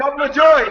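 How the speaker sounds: full-on scream, very high and very loud. Arguing about an album, shouting the other's phrase back, screaming. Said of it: "I can scream too".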